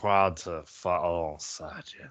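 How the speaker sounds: put-on slurred drunk voice. Told to say it with a slur, speaking to a fellow fighter: [name]'s drunken slur. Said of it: "Say it with a slur though".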